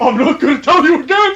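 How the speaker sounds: put-on very high, drunk mad-scientist voice, way up high. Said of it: "like an alcoholic Doc Brown".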